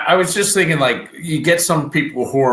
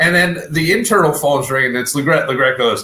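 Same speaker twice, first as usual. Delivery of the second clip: plain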